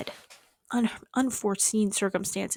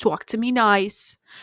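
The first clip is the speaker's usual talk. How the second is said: put-on New Jersey accent. Imitating a very funny woman's phrase that she ends everything with, in a put-on new jersey accent. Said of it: "like a New Jersey accent".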